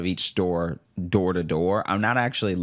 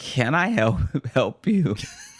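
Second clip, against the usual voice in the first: bright, eager, chipper, high-pitched cheerful tone; 6 semitones higher than usual. Retelling a woman in Claire's offering help, imitating a chipper woman. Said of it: "And she's all chipper".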